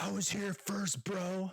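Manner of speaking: high mock shouting. Retelling how a fan on a bar stool yelled down: imitating a man shouting. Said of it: "he's shouting down".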